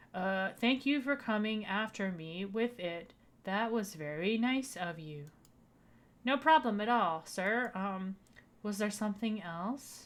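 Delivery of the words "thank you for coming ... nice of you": drowsy, unhurried, slow, sleepy teacher voice. Voicing the teacher in the game, now doing the voice: slow teacher voice. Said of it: "my slow teacher voice".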